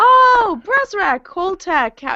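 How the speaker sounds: shrill, very high, very loud calling out. A player's character calls out to two figures heading down to the cargo deck: very loud call. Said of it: "I um very loudly go".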